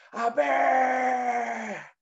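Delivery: loud screamed words.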